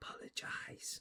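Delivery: whispered voice. In a tabletop game, a character speaks to a sleeping halfling, whispering. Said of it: "whispers to your sleeping".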